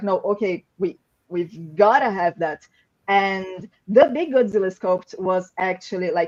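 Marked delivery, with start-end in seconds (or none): none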